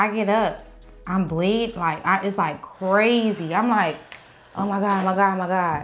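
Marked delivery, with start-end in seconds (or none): 4.5-5.9 acted-out panicked voice. Retelling finding no tissue in a guest bathroom: retelling own panicked words.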